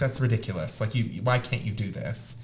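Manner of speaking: curt, snappish delivery. Recalling words said to someone who couldn't memorize the liturgy, retelling a snap. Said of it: "I snapped at someone".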